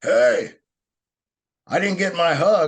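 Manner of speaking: mock very high, loud call carried across a room. Retelling how the bar owner called out as they were leaving; retelling a call across a bar. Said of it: "from across the bar, we hear".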